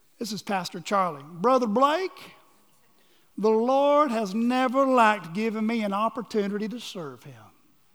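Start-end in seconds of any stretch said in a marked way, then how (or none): 1.2-7.3 put-on country accent. Asked where their country accent went, the speaker quotes Pastor Charlie: Pastor Charlie country accent. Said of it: "where my country accent go. Here it is".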